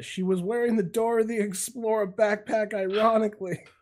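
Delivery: acted shouting, high. Adding a joke about what the arrested man yelled: imitating someone yelling. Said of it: "The second thing he yelled was".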